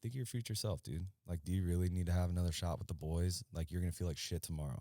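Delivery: plain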